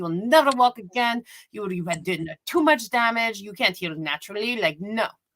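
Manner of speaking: put-on broad European accent, laid on thick. Retelling what a doctor told her, telling a patient she will never walk again, imitating a thick european accent. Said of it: "some sort of thick European accent".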